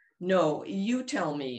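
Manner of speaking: very slow, pressing, insistent. Camellia turns on Vera after Vera hedges about the house, demanding. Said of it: "Camellia demanded".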